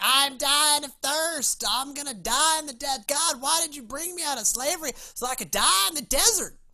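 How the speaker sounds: loud, high-pitched, grumbling, complaining tone. Retelling how the people complained to God in the desert: voicing complaining Israelites. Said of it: "that's the voice for Israel today".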